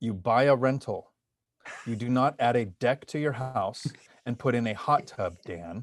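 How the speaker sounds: very slow, deliberate, each word laid out. Podcast host giving listeners money advice, saying it really slow. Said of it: "I'm going to say this really slow".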